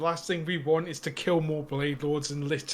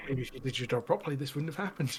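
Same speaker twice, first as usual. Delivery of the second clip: muttered quietly under the breath, quieter; 5 dB quieter than usual. Voicing a character leaving who mutters a jab: muttered under the breath. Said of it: "under my breath says".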